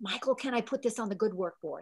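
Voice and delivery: soft, hushed stage whisper. Retelling a quiet question about the good work board: quietly half-whispering. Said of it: "I remember quietly whispering".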